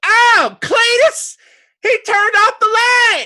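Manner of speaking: shrill woman's cry, very high and very loud. Narrating a fight scene, voicing the lady at the window: lady at the window voice. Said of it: "the lady at the window goes".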